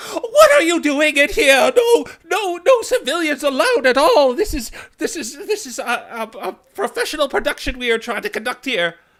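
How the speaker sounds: very high, shrill, very loud and fussy. Voicing a prim, pampered Rowlet who scolds intruders: fussy pampered Rowlet voice. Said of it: "But the Rowlet is like".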